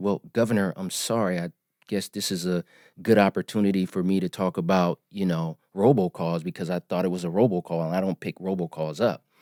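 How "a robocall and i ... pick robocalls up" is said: ordinary talk, nothing marked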